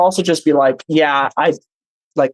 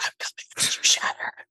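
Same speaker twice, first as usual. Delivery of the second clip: very soft, breathy whispered ASMR voice. Showing another player how to threaten an enemy: ASMR whisper. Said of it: "like A S M R".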